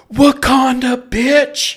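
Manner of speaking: shrill, booming, loud high-pitched yelling. Retelling a yell in the theater at a movie scene: retelling a yell. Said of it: "And I yell".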